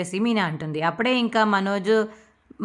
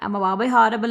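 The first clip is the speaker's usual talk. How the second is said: usual speaking voice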